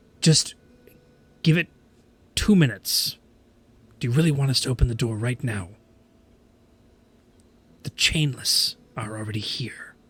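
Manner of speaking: stage whisper, half-whispered. Voicing a guard who leans down from high above: half-whispering guard. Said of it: "is whispering from, like, thirty feet in the air".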